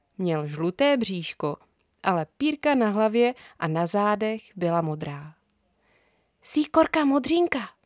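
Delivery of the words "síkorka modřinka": important-sounding whisper, much higher pitch. A girl names the bird at the feeder, whispering importantly. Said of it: "zašeptala Edinka důležitě".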